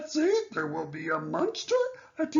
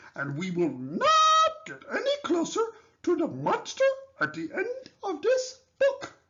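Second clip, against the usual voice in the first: high, cuddly, lovable furry monster puppet voice; 5 semitones higher than usual. Talking to the reader about the monster at the book's end, lovable furry old character voice. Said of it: "starring lovable, furry old [name]".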